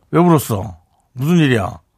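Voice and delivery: tough, gangster-like, thug-like manner. Redoing the line when asked, acting like a thug. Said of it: "이거는 약간 깡패 같고요".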